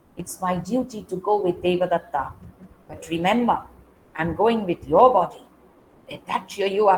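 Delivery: low, hushed voice not meant to carry. Narrator reads a woman speaking so one man cannot hear, in a low voice. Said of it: "In a low voice, so Devadatta cannot hear".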